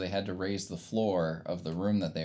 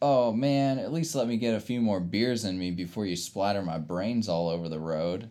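mocking, sarcastic, wisecracking tone; 3 semitones higher, 3 dB louder than usual. Retelling a movie character's line: imitating a sarcastic character. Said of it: "the sarcastic one that was always like".

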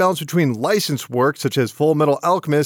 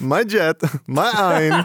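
put-on Eastern European accent. Joking about a picture of Jet with a friend, in a Borat impression. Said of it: "now you sound like Borat".

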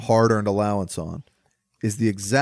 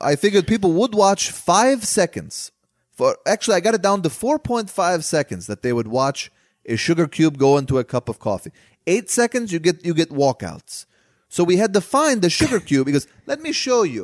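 fake foreign accent, not quite French, pitched up; 8 semitones higher than usual. Quoting him as he explains his thinking, in a put-on accent. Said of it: "I don't know why I'm doing this voice".

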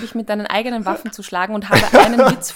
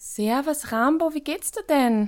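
put-on German with Viennese accent; 4 semitones higher, 6 dB quieter than usual. Telling a joke, voicing the Chihuahua greeting the Rottweiler, Viennese accent. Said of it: "ich kann ihn eigentlich nur ein bisschen auf Wienerisch erzählen".

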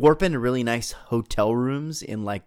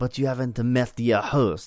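put-on weird French lady voice. Acting out a movie scene as Rosier: weird French lady Rosier voice. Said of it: "some weird lady named Rosier".

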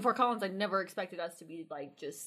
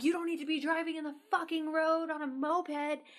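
imitated man's scream, higher; 8 semitones higher than usual. Retelling a road rage stop by another driver, imitating a man screaming. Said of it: "And he kept screaming at us".

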